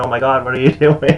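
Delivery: high, loud, fast, shocked yell.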